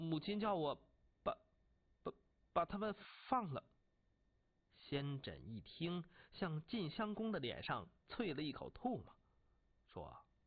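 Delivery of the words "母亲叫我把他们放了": stammering, stuttering, much higher pitch. The ruler answers his angry general's question, stammering. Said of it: "结结巴巴地说".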